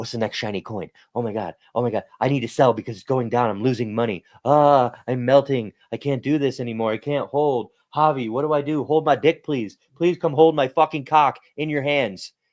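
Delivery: put-on, high, frantic, panicked pleading voice. Acting out people who sell when prices drop: imitating a panicking investor. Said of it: "ninety-nine percent of people think like that".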